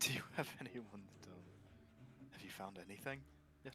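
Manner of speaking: almost a whisper, hushed, breathy, voice dropped low. Playing a character in a role-play scene, in a lowered voice. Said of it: "I'll kind of like lower my voice".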